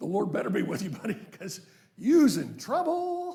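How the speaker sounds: sardonic, swooping delivery dripping with sarcasm. Rereading Saul's line to David the way it was meant: imitating Saul's sarcasm. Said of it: "I think he's like".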